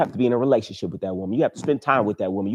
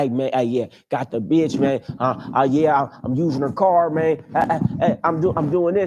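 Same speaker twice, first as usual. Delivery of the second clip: slow, halting, stammering, mocking ramble; 3 semitones higher than usual. Mocking the men who call in about a woman: imitating one of these guys.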